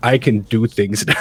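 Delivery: acted deadpan, dead-level monotone with no inflection. Mocking how a line was delivered, in a mock deadpan monotone. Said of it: "it was just like deadpan monotone".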